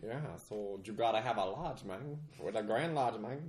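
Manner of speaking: put-on Dallas street accent. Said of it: "What accent is that?".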